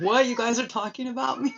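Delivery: high, little cat voice. Showing viewers the visiting cat's reaction: voicing the other cat. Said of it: "and this cat's like".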